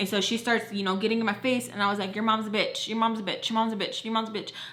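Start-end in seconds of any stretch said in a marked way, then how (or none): none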